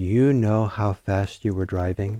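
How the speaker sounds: normal talking voice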